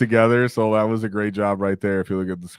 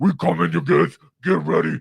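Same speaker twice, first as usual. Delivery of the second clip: rough orc yell, swinging high in pitch; 7 semitones higher than usual. Imagining someone on a model's radio yelling to the hive city: imitating an orc yelling. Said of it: "There's someone in there yelling".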